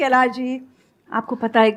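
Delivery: ordinary talk, nothing marked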